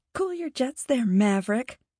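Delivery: said through a chuckle. Narrator reads Lily answering Mel, chuckling. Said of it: "Lily chuckled".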